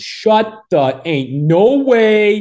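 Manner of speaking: screaming shout, very high-pitched, slow and drawn-out. Retelling a friend hearing news of a hole in one: imitating Colin screaming and yelling. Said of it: "he's out there screaming and yelling".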